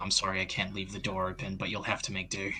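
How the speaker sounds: hushed, very quiet half-whisper. Voicing a character who apologizes to a prisoner: half-whispering quickly. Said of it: "he quickly whispers".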